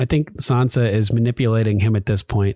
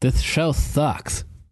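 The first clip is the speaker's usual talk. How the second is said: put-on cartoon teen voice, higher; 4 semitones higher, 4 dB quieter than usual. Voicing Beavis answering Butthead in the spoof: Beavis voice. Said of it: "As seen through the eyes of Beavis and Butthead".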